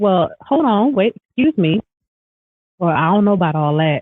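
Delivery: ordinary delivery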